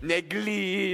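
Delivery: stressed l in negril. Repeating the town name after a tip: L said really hard in Negril. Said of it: "me have to say the L really hard".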